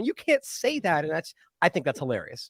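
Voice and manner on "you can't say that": prim, shocked, scandalized tone. Mocking offended people who clutch their pearls: imitating scandalized pearl-clutchers. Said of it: "clutching their pearls, going".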